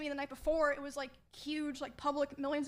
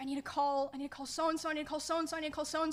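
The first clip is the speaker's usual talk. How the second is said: ordinary talk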